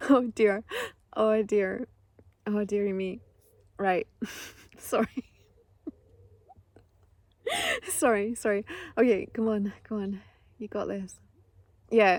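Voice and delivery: giggling and laughing through words. Apologizing mid-story after getting the giggles: giggling while talking. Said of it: "I've got the giggles".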